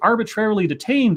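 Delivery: ordinary delivery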